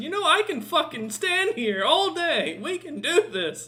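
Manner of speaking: very high, slow orc genie character voice. Voicing an orc djinn being pulled along: orc djinn voice. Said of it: "He goes".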